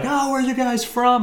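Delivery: put-on very high, far-carrying holler. Retelling a man calling from far across a park: imitating someone hollering. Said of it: "just hollering like".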